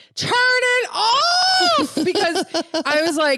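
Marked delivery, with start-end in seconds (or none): 0.2-2.0 put-on, very high, shrill yell stretching out "off". Recounting a past moment, the speaker re-enacts what they yelled. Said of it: "I yelled".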